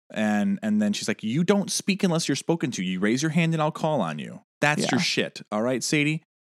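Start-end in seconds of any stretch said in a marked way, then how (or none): 1.2-5.4 acted-out, angry, scolding tone. Recapping an episode, acting out one woman scolding another: mock-angry scolding as Bailey. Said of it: "she's really pissed at Sadie".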